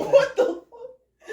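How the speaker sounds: high, slow, stretched-out laughing disbelief.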